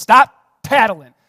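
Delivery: booming, very loud, scolding shout. Retelling how a parent yells at the kids: imitating yelling at kids. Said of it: "I'm yelling at my kids".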